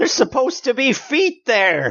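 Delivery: very high, startled, shrieking scream. Playing a character who sees something strange, screaming in character. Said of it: "I scream again then".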